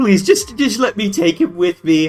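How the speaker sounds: very emotional, distraught, begging plea. Voicing an NPC mayor begging the others to let him go: emotional plea. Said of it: "very emotional, that mayor guy".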